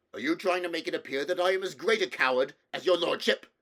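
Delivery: thoroughly angry, furious, very loud outburst. A narrator reading the king's retort to his lord, thoroughly angry. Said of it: "now thoroughly angry".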